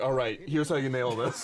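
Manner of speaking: put-on encouraging, coaching uncle voice. Joking about an uncle coming in to coach: imitating an uncle coaching. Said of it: "my uncle comes in, he's like".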